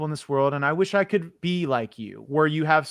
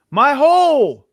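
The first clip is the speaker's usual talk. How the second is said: shrill, very high, very loud pained scream of terror; 11 semitones higher, 12 dB louder than usual. Retelling how a woman fell, imitating her pained scream. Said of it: "She screamed out in pain and terror".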